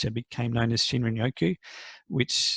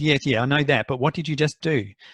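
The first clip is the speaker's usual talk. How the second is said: put-on accusing voice, louder; 3 semitones higher, 5 dB louder than usual. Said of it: "in a very accusative voice".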